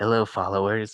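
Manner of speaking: put-on whisper. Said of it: "whispering into the darkness".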